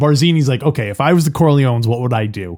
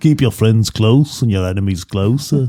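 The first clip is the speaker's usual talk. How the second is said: put-on British actor voice; 2 semitones lower than usual. Doing a Godfather line as an impression: Alec Guinness impression. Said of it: "That's my Alec Guinness impression".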